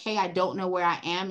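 ordinary delivery

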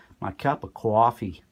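"coffee" said in a New Yorker accent. Showing how you say it in new york, in a new york accent. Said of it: "as I say in New York".

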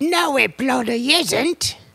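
shrill, very high, loud, very slow, drawn-out, deliberate delivery. Voicing a Monty Python old woman in a car: Terry Jones voice. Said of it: "So that's my Terry Jones".

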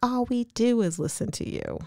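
mock condescending tone. Retelling how a woman answered Leanne upstairs: mock condescending tone. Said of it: "talking down to her".

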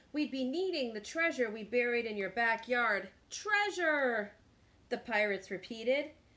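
ordinary delivery, nothing marked

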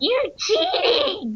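put-on very high, squeaky, accusing kid voice. Explaining why chat is off, imitating twelve-year-old kids yelling accusations. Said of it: "twelve-year-old kids going".

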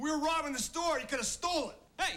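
full-on loud, high-pitched shouting. Scolding his partner for leaving the money during a robbery, yelling. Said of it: "don't yell at him".

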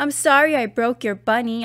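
plain reading voice

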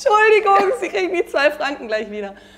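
high, loud called-out voice. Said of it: "ich hab nur gerufen".

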